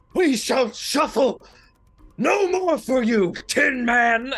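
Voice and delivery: very loud, high, shrill, trembling, shivering yell. Player voicing his character defying a creature called the Tin Man; shivering voice yelling. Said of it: "like a shivering voice just yells out".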